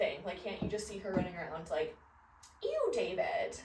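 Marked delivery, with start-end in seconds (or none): 2.6-3.6 put-on high-pitched valley girl voice. Picturing a favorite character running around, in an Alexis valley girl voice. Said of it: "talks like a valley girl".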